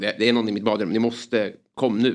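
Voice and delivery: ordinary talk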